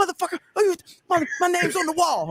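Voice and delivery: very high-pitched screaming rant. Retelling an angry outburst at a security guy: imitating someone screaming. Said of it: "screaming at the guy".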